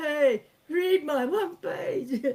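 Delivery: put-on pleading. Acting out a screenwriter pitching at closed doors: mock begging. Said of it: "banging on the doors with your begging bowl".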